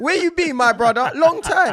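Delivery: high, loud, laughing shout in a Caribbean accent.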